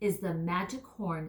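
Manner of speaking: ordinary delivery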